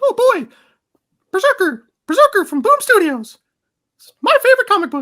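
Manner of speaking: very high, squeaky, bouncy cartoon voice. Answering a question that asks for it: Mickey Mouse impression. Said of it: "In your best Mickey Mouse impression".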